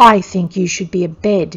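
snarling, snarled voice. Reading a story aloud, the narrator voices a man's line, snarling. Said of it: "he snarled".

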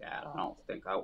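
imitated voice crackling near tears. Retelling a son saying he wants to quit racing: imitating a voice crackling near tears. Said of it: "his voice was crackling, like, he was gonna cry".

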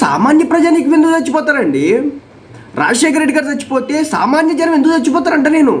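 high-pitched indignant outburst.

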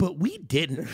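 whiny, nerdy comedian-style voice. Retelling a comic's video about covid: imitating a nerdy whiny voice. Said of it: "kinda nerdy-ass bitch voice".

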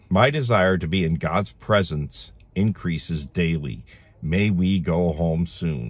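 ordinary talk

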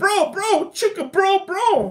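mock Boston accent. Joking to the group about someone from Boston, mock Boston accent. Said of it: "We talk like".

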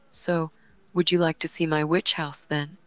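normal talking voice

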